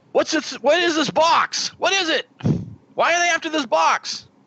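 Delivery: yelling in character voice. A player's character grabs a box and confronts a man, screaming in character. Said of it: "And I scream at the guy".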